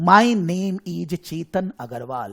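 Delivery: slow, loud, deliberate, measured delivery.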